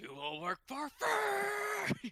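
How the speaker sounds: very high, very slow, drawn-out demonic scream. Suggesting what to shout at the mercenaries: screaming demonic voice. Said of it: "start screaming into the most, like, demonic voice".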